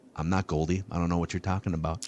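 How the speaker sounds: mock-deadpan flat delivery. Retelling how a man answered a question about being goldie, retelling a deadpan denial. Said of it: "just deadpans him right in the face".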